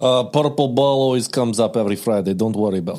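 put-on Russian accent. Asked to do a Russian accent, the speaker improvises a line about the purple ball. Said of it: "can you do a Russian accent?".

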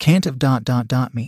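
ordinary delivery

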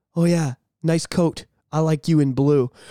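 very low, deep, slow, cool spy-style voice. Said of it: "she's pulling a pure Jason Bourne".

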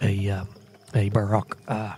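speaking quietly. Asking a party member in character, within the group: speaking quietly. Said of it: "I'm quietly going to say".

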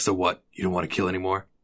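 acted very stoic, unmoved, creepy manner. Retelling how Taylor questions Barry: imitating Taylor's stoic creepy way. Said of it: "very stoic, like, creepy way".

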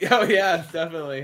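very loud, high voice with giggles breaking through. Asked how they are feeling, the speaker answers while giggling. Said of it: "It sounds like you got a little giggle going on".

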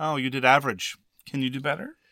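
put-on dismissive tone. Imagining how the book talks to the player: mock-dismissive tone. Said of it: "in some sort of incredibly dismissive tone".

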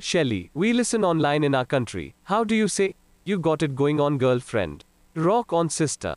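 put-on Indian accent. Performing a bit after being asked to talk like an Indian man: Indian man accent. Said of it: "talk like an Indian man".

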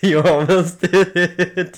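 very loud, high, laughing through the words. Teasing another speaker who nearly finished the sign-off: laughing while talking. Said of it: "Why are you laughing right now?".

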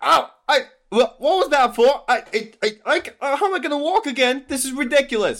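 crying out in pain. Game master voices a captain who just took an arrow to the knee, crying out in pain. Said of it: "he cries out".

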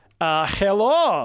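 put-on, attempted German accent. Retelling how a german guy greeted the speaker, in a german accent. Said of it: "I'm trying to do a German accent".

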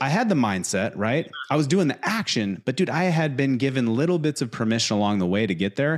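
plain

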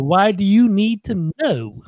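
put-on Southern drawl. Retelling a comedian's Hawaii bit: James Gregory impression. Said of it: "Does that sound like him".

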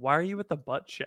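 earnest, sincere delivery, no joking tone. Retelling a voice Emma rarely uses, imitating Emma's earnest tone. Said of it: "she's saying it in earnest".

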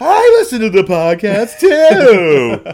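booming, shrill, very high, drawn-out, swooping sing-song. Recapping a scene where a character sees a podcast: Martin Short impression. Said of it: "was that a good impression?".

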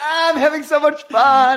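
mock, high, giddy, fake-cheerful voice.

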